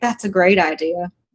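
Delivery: smug, knowing, self-satisfied tone. Voicing a character who agrees with a plan: smug. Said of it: "kind of smugly am like".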